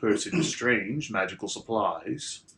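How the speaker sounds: deep, low voice. Narrating a phone call; the one answering the called number speaks in a deep voice. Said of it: "a deep voice answers and says".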